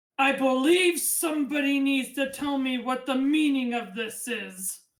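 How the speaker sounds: big voice, calling out loudly. As the knight steps onto the ramp, an unseen person yells: big, booming yell. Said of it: "yell in a big, booming voice".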